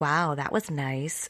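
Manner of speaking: mocking, sarcastic, slow drawl. Giving an example of saying one thing and meaning another: sarcastic. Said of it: "I guess that's sarcasm".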